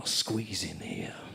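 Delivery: low, slow whisper.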